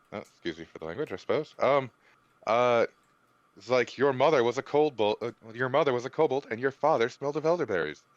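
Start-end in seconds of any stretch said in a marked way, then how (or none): 4.0-7.9 acted scornful, schoolyard-style jeering tone. Casting a mocking spell on a monster, mocking insult in character. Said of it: "As I cast Vicious Mockery".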